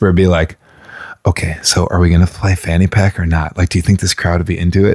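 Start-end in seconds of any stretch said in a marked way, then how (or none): 1.3-4.9 put-on whisper. Retelling own words while doing the set: imitating own whisper. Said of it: "trying to whisper".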